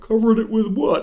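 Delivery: gentle, eerie, creepy voice pitched high. Mocking an actor's performance as a killer: imitating Charlie Hunnam's Ed Gein. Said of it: "He sounds like the dog in that video".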